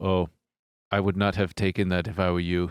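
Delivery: low, flat, dead-level, unvarying monotone. Retelling what he said from across the desk, flat monotone. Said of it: "They're very monotone".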